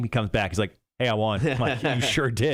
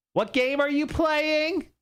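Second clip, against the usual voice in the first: put-on very high-pitched old lady voice.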